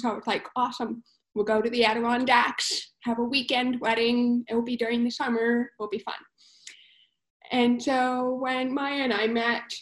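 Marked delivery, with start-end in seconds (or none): none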